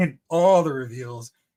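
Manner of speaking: dripping, heavily sarcastic delivery. Announcing the reveals after being disappointed by them: sarcastic. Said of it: "very sarcastically, he said".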